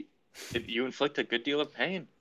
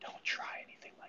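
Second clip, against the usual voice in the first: barely audible, hushed, menacing whisper. Holding the other in a reverse guillotine, whispering a threat. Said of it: "and I just whisper".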